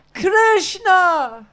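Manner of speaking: loud, high-pitched carrying voice.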